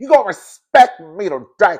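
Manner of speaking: very loud, high, nose-heavy nasal voice. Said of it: "she didn't sound like that".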